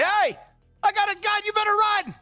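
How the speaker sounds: screaming as loud as possible. A player's character trying to intimidate others; screaming as loud as possible. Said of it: "I scream at them as loud as I can".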